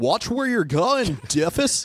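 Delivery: high, laid-back cool surfer dude crossed with classic film actor. Voicing the dog's thoughts toward the kid: Jimmy Stewart surfer dude mix. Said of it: "you did a mix of a cool surfer dude and what's his name".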